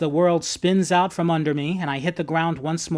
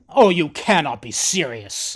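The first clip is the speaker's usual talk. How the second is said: said with a growl. Reading a story aloud, a character scoffs at the narrator: growling. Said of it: "he growls".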